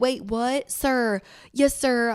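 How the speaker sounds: slow, very southern drawl, sounding tipsy. Showing how your voice sounds when you get drunk, in a southern accent. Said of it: "like I talk so southern".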